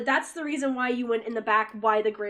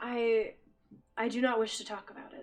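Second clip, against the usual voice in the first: cracking, breaking voice giving way; 6 dB quieter than usual. A character upset by a realization refuses to talk about it, voice breaking. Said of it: "you can hear like his voice breaks".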